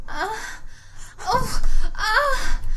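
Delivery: high climbing moans.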